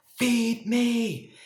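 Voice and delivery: very high, loud yelling shout. Acting out hunger grown strong and demanding attention: yelling hunger voice. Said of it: "hunger is gonna be yelling for your attention".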